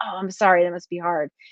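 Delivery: plain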